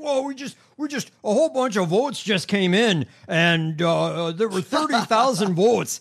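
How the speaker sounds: loud, high-pitched exclaiming. Retelling how Mike Lindell reported votes in the night: imitating Mike Lindell. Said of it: "he was doing this bullshit where he's like".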